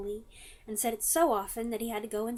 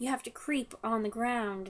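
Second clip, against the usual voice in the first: ordinary delivery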